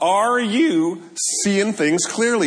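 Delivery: cracking voice. Speaking to an audience, asking them a question; voice cracking. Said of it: "voice crack".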